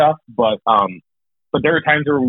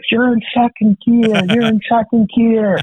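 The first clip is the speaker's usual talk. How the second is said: very high, repeated screaming yell; 10 semitones higher than usual. Retelling being screamed at while driving a grader: imitating someone screaming. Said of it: "he's screaming at us".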